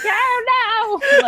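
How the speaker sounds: very high, shrill crazy-woman voice, drawn-out "oh". Explaining why they avoid doing British voices, Monty Python crazy-woman voice. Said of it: "the guy always plays the like crazy like woman".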